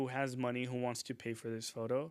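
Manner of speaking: ordinary talk, nothing marked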